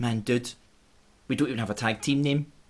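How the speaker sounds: plain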